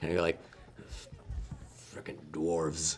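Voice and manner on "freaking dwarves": very low grumble muttered under the breath. Game master voices a character muttering while moving away, under his breath. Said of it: "hear him just under his breath".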